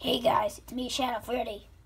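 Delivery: put-on character voice dropped pretty deep. Demonstrating the voice of a character for upcoming videos, in a deep Shadow Freddy voice. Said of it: "his voice is pretty deep".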